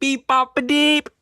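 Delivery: thundering, very high, booming call. In a tabletop game, a player casts thaumaturgy to send a message: booming voice. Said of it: "booming voice".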